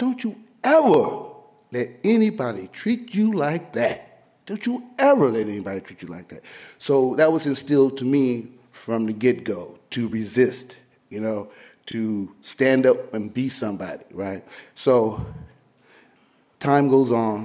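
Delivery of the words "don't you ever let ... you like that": angry, stern voice with swooping pitch. Retelling a mother's warning while watching the civil rights news: imitating angry mother. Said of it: "my mother gets so mad, she looks at me and says".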